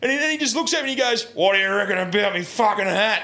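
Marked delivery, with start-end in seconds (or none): 1.3-3.2 hostile, confrontational, really aggressive delivery. Retelling what a man who'd had twenty tins asked them, mock-aggressive. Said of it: "Like, real aggressively".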